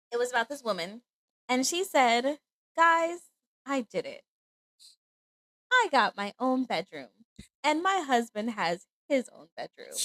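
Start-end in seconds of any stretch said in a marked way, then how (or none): none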